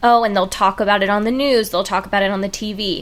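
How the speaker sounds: plain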